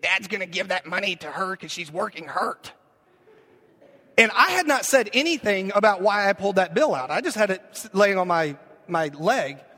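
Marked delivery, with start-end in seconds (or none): 0.0-2.7 put-on odd, small boy's voice. Retelling what eight-year-old Bryce said about the bill, Bryce's weird little voice. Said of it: "he's got this weird little voice".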